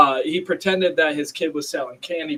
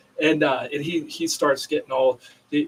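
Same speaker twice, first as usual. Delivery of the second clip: ordinary talk, nothing marked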